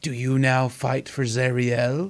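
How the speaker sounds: slow, eerie, otherworldly possessed-sounding voice. In a game, a voice speaks from a possessed character's mouth, eerie possessed voice. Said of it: "That is not her voice".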